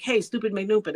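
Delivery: normal talking voice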